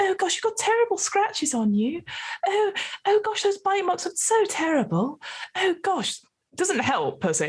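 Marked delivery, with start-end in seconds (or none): 0.0-6.2 very high, swooping, sing-song fussing voice. Back at the parlour, Jennifer comes over to you, fussing over you. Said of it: "sort of comes over and sort of fusses over like".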